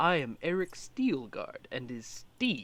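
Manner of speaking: restrained, toned-down, soft, hushed voice. Player's character walks up to him and introduces himself, quieter than last time. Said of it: "I'm going to say um quieter than the last time".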